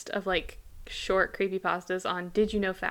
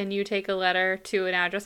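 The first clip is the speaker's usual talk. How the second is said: ordinary talk, nothing marked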